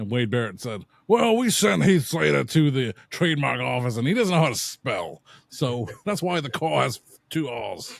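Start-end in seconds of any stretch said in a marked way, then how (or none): 1.1-8.0 imitated English wrestler voice. Retelling what a wrestler said about spelling: Wade Barrett impression. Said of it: "I just perfected my Wade Barrett impression".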